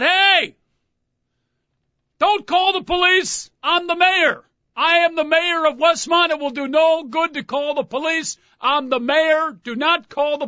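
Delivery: slow, very high, drawn-out mock drunk man yelling. Retelling a drunk partygoer yelling from a window: imitating a drunk man shouting. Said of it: "starts shouting out".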